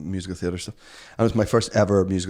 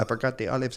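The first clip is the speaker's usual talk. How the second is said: terrible, clumsy, fake put-on Spanish accent; 4 semitones higher, 5 dB quieter than usual. Retelling an audition line in a terrible spanish accent. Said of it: "I had to do a Spanish accent".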